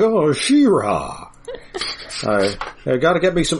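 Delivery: drawn-out, slow, swooping, sing-song talking-horse drawl. Trying out a horse character's voice, horse voice like Jimmy Stewart. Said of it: "my horse voice is just Jimmy Stewart".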